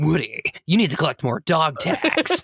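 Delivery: animated, bitter, battle-hardened soldier voice. Imagining a gritty voice actor playing Buzz: David Hayter voicing Buzz. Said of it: "David Hayter voicing Buzz".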